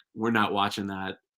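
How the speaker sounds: normal talking voice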